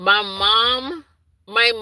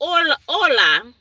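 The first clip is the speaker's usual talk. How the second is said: higher-pitched, Spanish-flavored voice. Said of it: "I don't know why I'm thinking Spanish".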